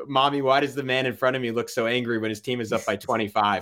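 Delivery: ordinary talk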